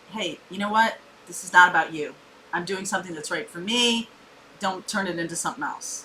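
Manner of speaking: plain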